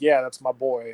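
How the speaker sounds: deliberately deepened voice pushed into the chest. Mocking how another speaker says Tom Brady: imitating Weston's deeper voice. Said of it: "his voice gets deeper".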